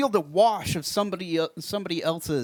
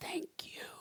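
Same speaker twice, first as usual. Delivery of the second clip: quieter, final dying gasping breath. Voicing a dying creature answering a player: final dying gasp. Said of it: "with a final gasp go".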